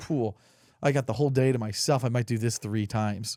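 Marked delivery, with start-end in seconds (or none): none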